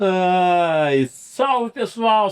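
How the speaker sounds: speaking through laughter. Podcast host greeting YouTube viewers at the start of an episode: laughing while talking. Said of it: "Sabe por que que eu tô rindo aqui?".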